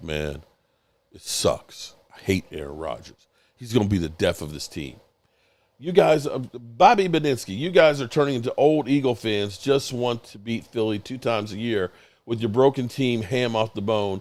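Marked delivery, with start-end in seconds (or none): 0.0-5.0 very deep, very low bass voice. Retelling what a friend said about his quarterback: imitating a friend's deep voice. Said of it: "Richard's got the deep voice".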